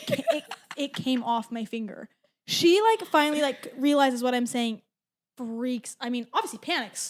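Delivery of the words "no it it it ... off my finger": normal talking voice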